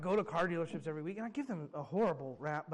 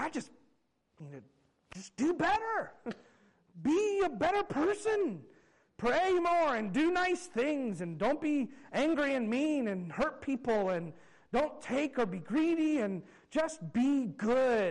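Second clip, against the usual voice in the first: high, slow, earnest and determined. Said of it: "we're like".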